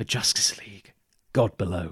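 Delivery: put-on quiet mutter. Retelling a Superman scene, the speaker acts out Lex Luthor muttering under his breath. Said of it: "very quietly under his breath goes".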